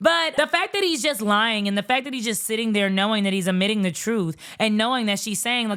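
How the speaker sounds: ordinary talk, nothing marked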